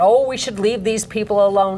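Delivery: plain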